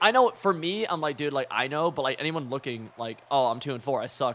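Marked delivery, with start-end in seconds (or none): none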